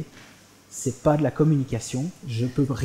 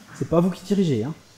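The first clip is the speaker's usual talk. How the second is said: normal talking voice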